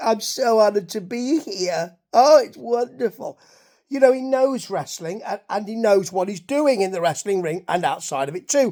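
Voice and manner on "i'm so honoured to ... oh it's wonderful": play-acted slow, sickly-sweet, gushing, cloying tone. Describing a wrestling guest, mocking how a cloying guest would sound: imitating a cloying gushing guest. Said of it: "it doesn't look like he's just cloying".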